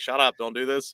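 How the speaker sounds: ordinary delivery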